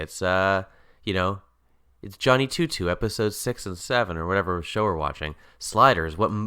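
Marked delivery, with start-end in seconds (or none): none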